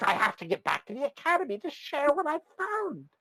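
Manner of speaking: thrilled gnome voice, very high and swooping. Voicing a gnome who reaches the ship: excited gnome voice. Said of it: "The gnome seems very excited".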